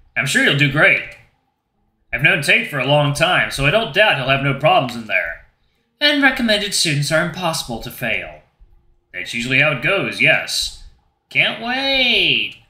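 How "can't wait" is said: awkward, unconvincing sarcasm, "wait" drawn out. Answering someone about tomorrow's auditions: awkward sarcasm. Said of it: "that wasn't awkward sarcasm in your voice".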